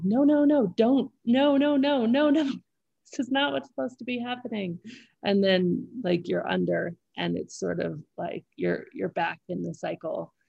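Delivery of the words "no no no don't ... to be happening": desperate, high screaming. Retelling a part of oneself fighting against falling asleep: imitating inner voice screaming.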